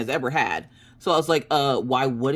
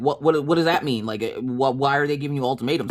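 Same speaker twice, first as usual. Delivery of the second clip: put-on panicked, freaking-out voice. Retelling own reaction to a partner's news of an ultimatum: retelling own freak-out. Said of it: "'cause I freaked out and I was like".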